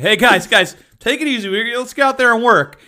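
put-on nervous, on-edge voice. Retelling calming two arguing kids, acting out own nervous past self. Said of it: "I just got real nervous".

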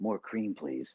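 flirtatious voice. Showing another man how to ask a woman for more cream, in a flirty tone. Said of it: "Like you would ask for a woman like this".

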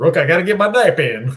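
loud, high-pitched, heavy Southern drawl. Retelling Lee Smith's answer to Burdick, the speaker uses Lee Smith's Southern drawl. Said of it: "kind of like a Southern drawl".

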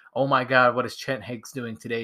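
ordinary delivery

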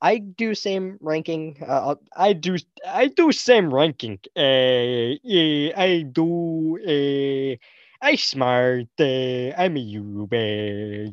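slow put-on dunce voice. Giving a film ranking as a joke: put-on dunce voice. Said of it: "I sounded like a dunce".

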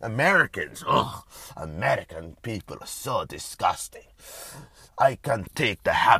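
Russian-accented speech. Speaking off the cuff about people's habits, in a put-on Russian accent. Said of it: "Why am I doing a Russian accent?".

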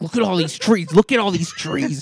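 play-acted yelling, toned down and held back. Retelling a car ride, imitating a man yelling at the speaker, retelling a yell. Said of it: "he starts yelling at me, like".

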